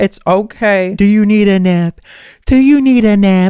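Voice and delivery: soothing, gentle kindergarten teacher voice.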